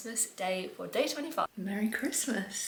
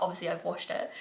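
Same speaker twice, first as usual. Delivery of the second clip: ordinary delivery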